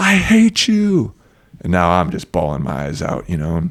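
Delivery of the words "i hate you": very high, loud, raised scream. Retelling what the son screamed: imitating a scream. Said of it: "And my son screams".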